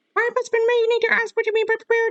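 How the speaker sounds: high cartoon mouse voice. Trying to get back into character to redo a line: Mickey Mouse voice. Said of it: "let me try to get back into the Mickey Mouse voice".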